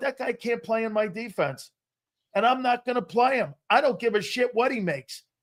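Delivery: normal talking voice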